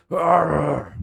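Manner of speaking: shrill, high devilish monster roar, stretched long. Voicing a wounded devil hit by an arrow: devil roaring. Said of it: "he roars out".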